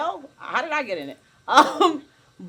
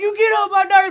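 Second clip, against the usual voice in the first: loud, high, mock grumbling through laughter; 9 semitones higher, 7 dB louder than usual. Retelling what a cousin said: imitating someone laughing while talking. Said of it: "but she's laughing".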